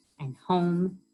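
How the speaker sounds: ordinary delivery, nothing marked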